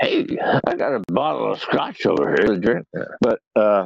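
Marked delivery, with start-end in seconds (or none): 0.0-2.9 put-on film producer voice, sing-song. Retelling how producers talk to actors, imitating a film producer. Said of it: "and they're always".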